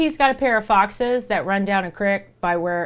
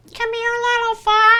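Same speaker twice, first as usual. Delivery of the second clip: put-on very high, squeaky, botched crazy old-man voice; 5 dB louder than usual. Speaker imagines a stranger calling to them by a creek in Kentucky; Herbert impression. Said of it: "talking to me like the crazy old dude".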